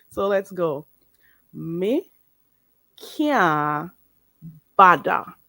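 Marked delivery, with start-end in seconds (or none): 1.5-5.2 Jamaican patois with kya stretched out. Teaching how to say "I can't be bothered": Jamaican patois pronunciation. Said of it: "that's how you say it the Jamaican way".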